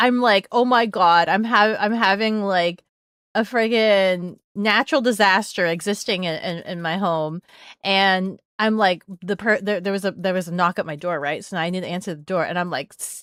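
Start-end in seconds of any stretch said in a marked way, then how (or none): none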